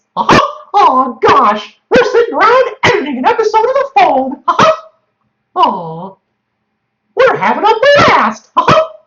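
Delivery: very high squeaky cartoon voice with big pitch swoops. Asked by the other speaker to do it, doing a Mickey Mouse voice. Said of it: "do your Mickey Mouse voice".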